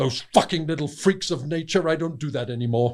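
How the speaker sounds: mock, mildly angry, with a flash of anger. Quoting a man's exact words after asking whether he stopped that work: mock-angry quote. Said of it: "he looked at me a bit angrily".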